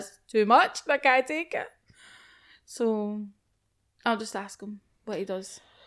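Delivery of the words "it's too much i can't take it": put-on stressed voice. Explaining that putting up one post is too much, acting out own stress. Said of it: "I'm just like".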